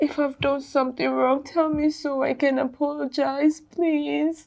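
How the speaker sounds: high-pitched, tearful, pleading crying. A girlfriend pleading with her partner who has been hitting her, crying. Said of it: "Why are you crying?".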